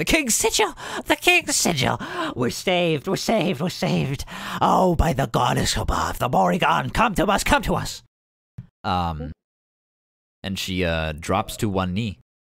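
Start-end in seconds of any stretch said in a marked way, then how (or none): 0.0-8.0 very high, swooping witch-like hag shriek. Narrating a game scene, voicing a hag belting words into the air: screaming hag. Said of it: "just screaming like".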